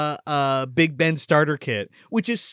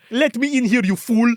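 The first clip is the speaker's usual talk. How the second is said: put-on barked, higher-pitched Russian accent; 7 semitones higher, 3 dB louder than usual. Retelling a movie scene, voicing the pipe-wielding intruder in a russian accent. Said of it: "got a Russian accent in this".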